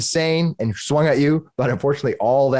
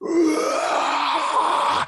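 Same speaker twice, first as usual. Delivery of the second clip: enraged creature scream, higher. Voicing a raging monster screaming at a player: monster screaming. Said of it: "inhales and he screams at you".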